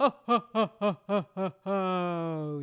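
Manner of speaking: deep, low, rounded, very slow, each ho stretched. Showing students a low-larynx sound: Santa Claus sound. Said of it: "make a sound like Santa Claus".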